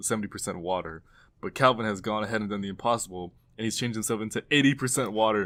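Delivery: plain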